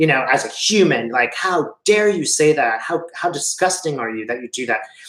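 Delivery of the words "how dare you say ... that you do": put-on newscaster voice in a sudden outburst. Retelling how a newscaster broke from his usual tone: imitating a newscaster's outburst. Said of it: "He just breaks through his usual newscasting".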